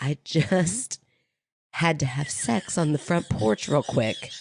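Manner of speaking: put-on, imitated whisper. Retelling what a friend said in the kitchen: imitating a whisper. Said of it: "you were whispering it so that your kids".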